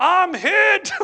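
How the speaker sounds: high, loud, far-carrying scream. Retelling a kid running down the hallway, imitating a kid screaming. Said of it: "he's screaming".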